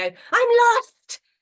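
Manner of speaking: put-on shrill, very loud, very high five-year-old voice. Describing a class exercise in the dojo, the teacher pretends to be a lost five-year-old. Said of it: "pretend to be five".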